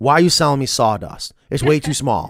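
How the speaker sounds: put-on angry, complaining voice. Retelling a customer's complaint about the small size: imitating an angry customer. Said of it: "madder than hell".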